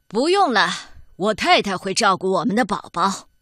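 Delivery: gruff, rough man's voice. Reading a story, the narrator voices a man answering a pleading woman: gruff voice. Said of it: "男人粗声粗气地说".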